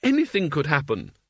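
plain reading voice

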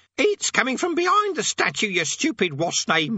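very high, croaking parrot voice. Narrator reading a parrot speaking into a character's ear, croaking parrot voice. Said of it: "it croaked".

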